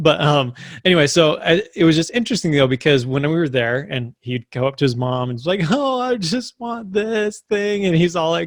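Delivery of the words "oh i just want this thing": put-on very slow, high, drawn-out whiny kid voice. Retelling how a four-year-old nephew asked his mom for something: imitating a whiny child. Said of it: "he kinda has this, like, whiny voice".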